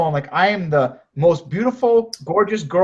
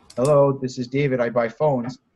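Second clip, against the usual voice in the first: low, unsure, unfriendly, unconfident voice; 4 semitones lower than usual. Speaker showing how not to answer the business phone, unconfident, unfriendly greeting. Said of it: "if you're answering the phone like".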